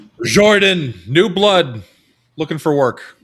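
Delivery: very loud, high-pitched bellowing voice. A guard stops short of a door and calls out, bellowing. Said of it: "just just bellows out".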